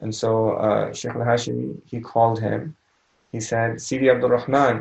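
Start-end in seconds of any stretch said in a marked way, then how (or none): 3.8-4.8 put-on Moroccan accent. Retelling how a sheikh called Abdul Rahman: Sheikh al-Hashimi's Moroccan accent. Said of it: "He called him in his Moroccan accent".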